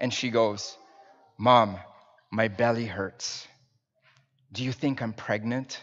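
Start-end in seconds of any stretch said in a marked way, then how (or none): 1.4-5.8 serious, concerned, voice dropped, put-on childlike tone. Retelling a daughter's question to her mother: imitating a child's concerned tone. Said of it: "seriousness in, in her face and with this concern, right, in her, in her, uh, in, in her tone of voice".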